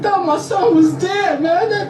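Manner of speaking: pretend crying, put-on sobbing. A father speaking in a news clip about his son, fake crying. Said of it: "you got on there fake crying".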